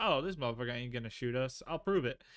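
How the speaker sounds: plain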